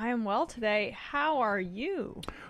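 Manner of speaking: slightly high-pitched with upward lilt throughout. Greeted by the host at the show's start, answering with rising, slightly higher pitch. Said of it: "you said that with a rising intonation to your voice that was slightly higher than normal".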